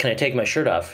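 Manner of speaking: usual speaking voice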